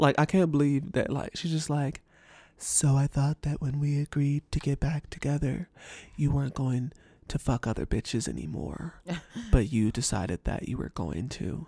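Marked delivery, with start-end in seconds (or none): 2.6-11.7 mock cool, blunt, straight-talking, matter-of-fact tone. Quoting what Rachel said to him: Rachel's flat monotone. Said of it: "Rachel gave him the best monotone read I've ever heard in my life".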